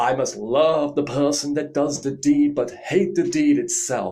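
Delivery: put-on loud, high dodgy American accent.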